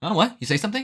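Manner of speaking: put-on very high, clueless, oblivious anime girl voice. Acting out the girl's reply in the same anime trope: imitating an anime girl who didn't hear. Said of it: "And the girl's like".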